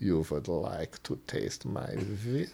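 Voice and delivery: put-on heavy Romanian accent, very soft and hushed. Retelling an encounter, the speaker quotes a woman holding a whip: thick Romanian accent. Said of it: "she says in like this thick, like Romanian accent".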